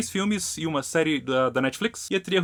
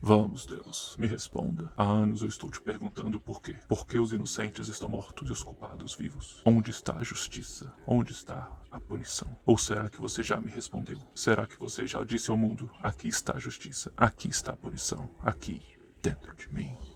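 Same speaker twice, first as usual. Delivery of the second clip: put-on deep hero voice, lower and quieter; 7 semitones lower, 7 dB quieter than usual. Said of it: "ele fala com a voz grossa dele de, de herói atormentado".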